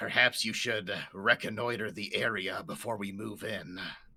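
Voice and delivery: hushed half-whispered stage whisper. Speaking in character to another party member: half-whisper. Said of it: "I kinda whisper to Et-".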